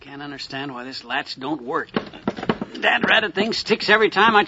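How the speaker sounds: mumbling away under the breath. Mcgee struggling with a stuck medicine chest latch: muttering into his beard. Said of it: "what are you muttering into your beard about?".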